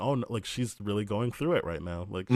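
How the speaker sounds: ordinary talk, nothing marked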